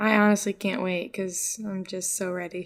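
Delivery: hollow, put-on sincerity, fake-sounding, insincere. Saying how eager they are to get to a film: sounding fake. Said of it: "Sound really fake".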